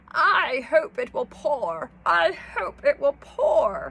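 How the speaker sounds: very loud, croaky tree toad voice. Reading a rhyming story aloud, the tree toad speaks: croaking toad voice. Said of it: "croaked the tree toad".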